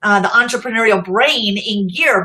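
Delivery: ordinary delivery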